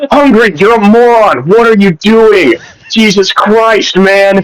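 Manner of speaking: put-on yelling in anger. Retelling yelling at someone after a vote went wrong, retelling an angry yell. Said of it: "I just need to yell at you".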